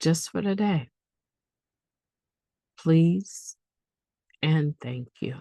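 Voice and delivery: measured, unhurried pace. Finishing the serenity prayer, say it a little slower than usual. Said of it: "I said it a little bit slower today".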